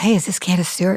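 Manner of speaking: hushed, half-whispered stage whisper. Retelling a phone call with the studio manager: imitating someone half-whispering. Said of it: "she was whispering".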